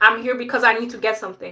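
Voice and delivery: loud, no-nonsense tone. Retelling a firm reply to a rude coworker: retelling own amplified tone. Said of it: "I kinda amplified my tone".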